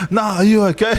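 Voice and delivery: high-pitched, laughing, worried mum voice.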